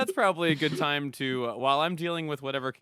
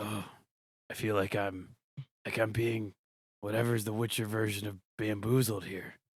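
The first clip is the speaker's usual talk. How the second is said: low, rough, gravelly delivery; 4 semitones lower, 6 dB quieter than usual. Repeating the line after being asked for a gravelly voice: gravelly voice. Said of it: "why don't you say that in a gravelly voice?".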